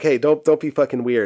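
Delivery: normal talking voice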